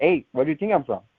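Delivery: ordinary delivery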